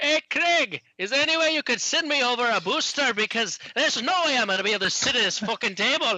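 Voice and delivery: loud, high-pitched calling voice. Asking Craig in a bar for a booster seat: loud voice. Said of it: "Why are you so loud?".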